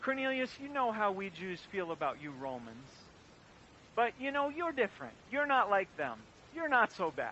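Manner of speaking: condescending, patronizing, mock-generous talking-down tone. Imagining someone talking to a roman outsider, mock-condescending. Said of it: "saying to someone like Cornelius condescendingly".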